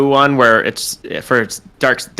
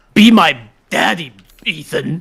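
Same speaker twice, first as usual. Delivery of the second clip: put-on gravelly monster voice, higher pitch; 4 semitones higher than usual. Showing how the fetus that chases the player talks: fetus monster impression. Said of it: "The fetus is more like".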